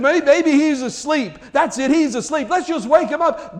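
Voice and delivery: high, loud, mocking, jeering taunt. Retelling how a man mocked the prophets: imitating a mocking taunt. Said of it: "he's just yelling".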